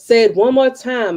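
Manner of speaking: loud, high voice. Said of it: "I could show you better than I could tell you".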